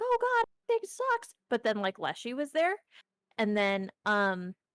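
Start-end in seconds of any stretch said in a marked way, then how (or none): 0.0-1.3 very high, weepy, sobbing lament, acted out. Retelling what a crying woman said: imitating a crying woman. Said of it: "there was a lady who was crying".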